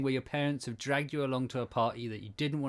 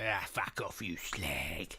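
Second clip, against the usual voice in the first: deep voice with drawn-out Cockney accent; 6 semitones lower, 5 dB quieter than usual. Showing how to do the accent properly: deep East End accent. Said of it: "deeper though, so you can get proper East End".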